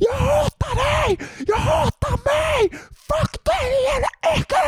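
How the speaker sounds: mock, very high, very slow, drawn-out screaming. Retelling how the inner voice screamed during a dark phase: imitating a screaming inner voice. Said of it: "Alltså bara skrek".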